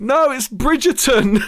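play-acted very high-pitched shout. Retelling a reply shouted up the stairs: imitating someone shouting upstairs. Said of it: "she just shouts up the stairs".

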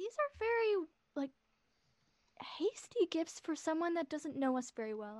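confiding, stage-whispered aside. Before he comes back to the table, the speaker leans in to the group: whispering to the group. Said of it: "I'm just gonna like whisper to the group".

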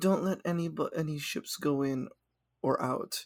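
mock-calm delivery. Retelling a scene, the speaker imitates a character talking to a winged lizard person, very calm. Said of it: "he just very calmly".

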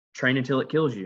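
mock plain, unemphatic, matter-of-fact delivery. Quoting a character's line while recapping a scene: imitating a matter-of-fact delivery. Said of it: "she says it so matter of fact".

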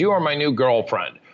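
normal talking voice

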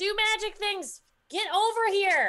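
very high, shouted yell. Voicing a character in a fight calling an ally to use magic: yelling in character. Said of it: "I'm just gonna yell at Caleb".

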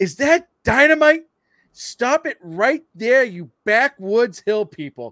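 acted exasperated delivery. Quoting a favorite movie scene on a pier, mock annoyed. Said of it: "you can tell he's so fucking annoyed".

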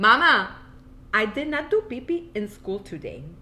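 put-on cartoon kid voice with Latin accent. Mother imitating her child talking to Mama, Peppa Pig accent mixed with Latin. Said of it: "a little bit of like a Peppa Pig accent mixed with a Latin accent".

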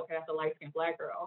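usual speaking voice

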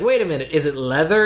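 plain

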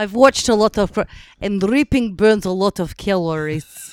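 loud put-on Russian accent. Trying out accents in conversation, drifting into a put-on Russian-sounding accent. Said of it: "are we in Russia now?".

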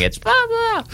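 put-on screaming voice. Imagining a listener in their car: imitating someone screaming at the radio. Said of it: "screaming at the radio going".

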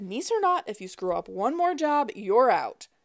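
snide, snotty and dead serious. Narrator reads a man's line to his niece, snotty and serious. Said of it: "he said it all snotty and serious".

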